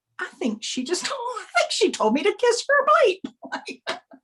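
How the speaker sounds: dawning disbelief.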